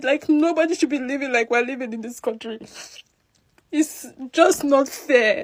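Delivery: tearful words, speaking through tears. Talking in a video about landing at the airport, crying. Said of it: "I'm crying because I'm paid".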